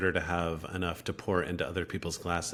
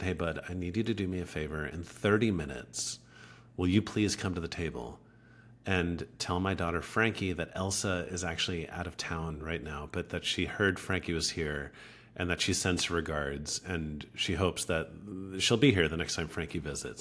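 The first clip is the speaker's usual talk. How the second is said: normal talking voice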